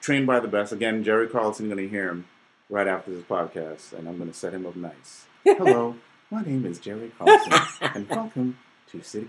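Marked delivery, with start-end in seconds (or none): 5.4-9.3 gentle, soothing, calm mentor voice. On a podcast, imitate a guest's mentor introducing himself, in a soothing Jerry Carlson voice. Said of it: "he's a great soothing voice".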